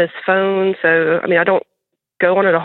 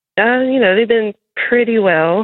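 hesitant, hesitating voice pitched much higher; 4 semitones higher than usual. Asked to paint a picture of the marriage, answering hesitant. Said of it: "You said that with hesitancy".

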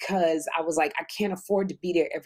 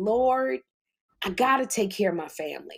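acted tearful crying, much higher; 4 semitones higher than usual. Recalling no sleep and Jeffrey's meltdown, retelling crying on the floor. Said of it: "falling on the floor crying".

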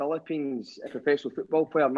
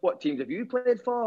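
Yorkshire-sounding voice, higher; 7 semitones higher than usual. Retelling a lad at training asking about his old teams, in a yorkshire accent. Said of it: "It sounds like he's from Yorkshire".

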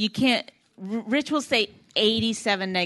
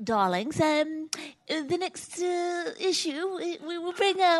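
soft, pitched-up English accent, podcast host style; 8 semitones higher, 6 dB quieter than usual. A podcast host brings up the next issue in an english accent. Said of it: "in an English accent".

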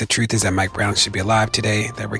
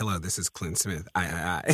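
grave, no-nonsense, very serious and earnest voice; 3 semitones lower, 10 dB quieter than usual. Imitating Clint introducing himself on the show: imitating Clint's serious voice. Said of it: "your voice, Clint, is just so serious".

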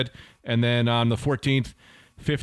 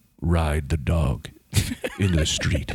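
trained radio announcer voice, much lower-pitched; 8 semitones lower than usual. Showing off the voice from a radio class, in a radio announcer voice. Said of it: "Listen to the way it sounds".

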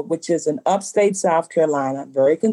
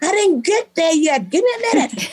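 very high shrieking at full lungs; 13 semitones higher than usual. Retelling a friend shouting from the stairs: imitating Erin Lee screaming. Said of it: "screaming at the top of her lungs".

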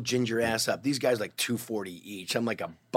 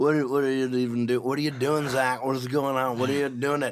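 put-on drunk voice, pitched higher; 3 semitones higher than usual. Retelling a drunk buddy grabbing his injured arm, imitating drunk Shane. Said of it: "He's hammer drunk".

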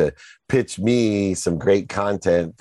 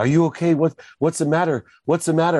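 mock frightened, terrified tone, voice very high; 10 semitones higher than usual. Retelling crying at their mom's door, the speaker imitates her terrified reply. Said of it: "my mom gets terrified".

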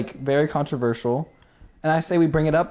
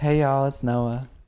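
put-on feminine voice. Doing a podcast intro bit with a co-host, in a put-on feminine voice. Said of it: "you talk in like a feminine voice".

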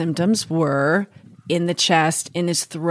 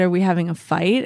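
ordinary talk, nothing marked

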